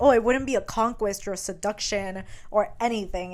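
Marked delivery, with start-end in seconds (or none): none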